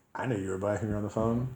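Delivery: ordinary delivery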